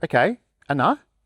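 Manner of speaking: mild, gentle, easy delivery. Demonstrating their own calm response in the moment, gentle. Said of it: "I just gently go".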